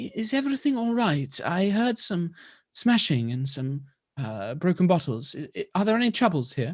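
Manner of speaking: very soft-spoken, gentle, high calling out. Game narrator voices a woman who emerges and calls out, very soft voice. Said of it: "in a very soft voice kind of calls out".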